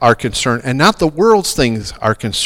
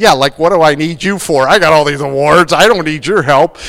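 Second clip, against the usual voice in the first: loud, mock sarcastic, scoffing, dismissive tone; 2 semitones higher, 5 dB louder than usual. Retelling Kevin's reply when a woman asked him to write with her, mock-sarcastic. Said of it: "Kevin in his sarcasm goes".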